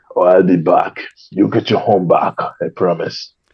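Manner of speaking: Austrian action-star accent. Pitching reverse mortgages as Arnold Schwarzenegger, Arnold Schwarzenegger accent. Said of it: "it would be Arnold Schwarzenegger".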